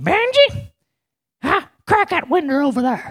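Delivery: very high-pitched grandmotherly calling voice. Setting up a story by showing how his grandmother talked, imitating Momo's voice. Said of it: "That's the way she talked".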